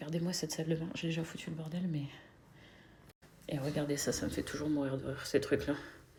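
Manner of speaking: soft, hushed talk, near whisper.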